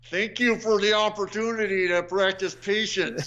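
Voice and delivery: acted through clenched teeth. Acting out what they say when someone is bothering them, retelling through gritted teeth. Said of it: "I usually say this through gritted teeth".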